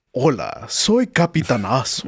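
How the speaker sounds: swooping Latin American Spanish-dub cartoon superhero voice. Fan imitating a Mexican voice actor's dubbed cartoon role: Spanish-dub Captain Hero voice. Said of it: "for Captain Hero, he's like".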